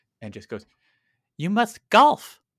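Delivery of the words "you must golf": squeaky mouse announcer voice, very high and very loud. Retelling a voice that came over a PA to the speaker and a friend: mousy voice over a PA. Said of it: "this kind of like mousy voice comes over a PA".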